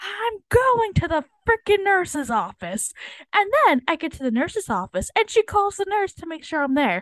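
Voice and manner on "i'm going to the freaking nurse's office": shrill, screaming yell. After getting a detention slip, retelling yelling back at her: retelling a scream. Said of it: "And I scream right back".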